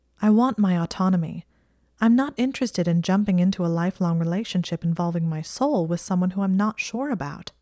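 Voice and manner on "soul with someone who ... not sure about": plain reading voice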